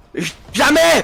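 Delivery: excited, hyped yelling.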